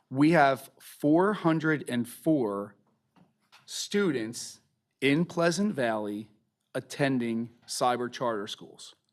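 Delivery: very slow, deliberate, each word spaced out. A speaker stresses an important number to listeners, speaking very slowly. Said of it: "I'm going to say this number very slowly".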